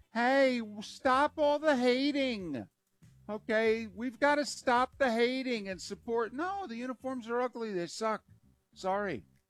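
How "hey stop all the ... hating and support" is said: put-on mock whiny, pleading, whining voice. Mocking what he said on stage about the uniforms, imitating his whining. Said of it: "he's whining".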